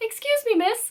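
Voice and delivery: failed put-on Irish accent, very high. Retelling a bus ride, speaker quotes a kind old lady in a bad Irish accent. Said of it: "I can't do an Irish accent".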